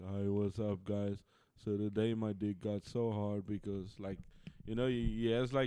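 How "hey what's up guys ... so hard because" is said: dry, flat, deadpan monotone drone. Imitating a gamer creator known for his voice: imitating a monotone delivery. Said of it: "He's notorious for his voice".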